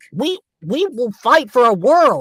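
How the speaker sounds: very high, youthful rousing voice. Voicing a character addressing his people: higher, younger character voice. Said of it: "maybe I could make it uh, just a little higher, you know, so it's a little more young".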